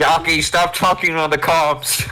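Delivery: high-pitched yell through a vehicle loudspeaker. Yelling an order through a suit speaker at a teammate: yelling over a loudspeaker. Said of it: "I'm gonna yell from my A C P A using the A C P A speaker".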